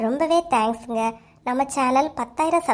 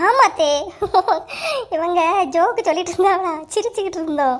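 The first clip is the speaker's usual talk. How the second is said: fake cheerful, bright, laughing chatty delivery. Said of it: "act பண்ணியம்மா நீ".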